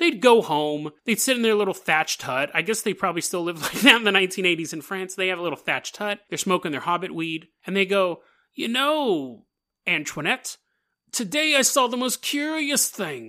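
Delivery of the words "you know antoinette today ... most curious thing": put-on old British man voice, pitched up. Acting out french villagers talking in their thatched hut; old british guy voice. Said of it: "you sound like an old British guy".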